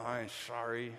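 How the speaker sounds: teeth clenched, forced smile. Acting out a child told to say sorry to another child, through clenched teeth. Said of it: "with clenched teeth and a forced smile".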